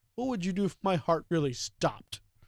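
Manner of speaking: normal talking voice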